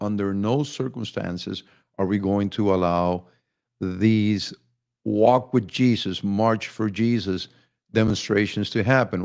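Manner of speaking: ordinary talk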